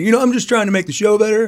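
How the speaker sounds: high, sweet, innocent-sounding pitch, way up.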